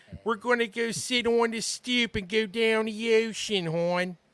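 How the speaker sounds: very high-pitched, thick, laid-on Baltimore accent. Speaker demonstrates how people in Baltimore talk, thick Baltimore accent. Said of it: "the accent sort of slightly changes".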